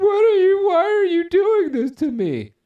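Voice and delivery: put-on very loud, very high sobbing. Acting out a beaten man who is crying, imitating someone crying. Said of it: "the guy's crying like".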